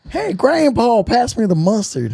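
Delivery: high, swooping voice. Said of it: "why did I even make that voice".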